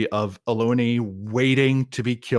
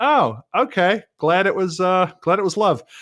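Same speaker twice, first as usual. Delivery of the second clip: put-on relieved, awkward tone. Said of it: "And you're like".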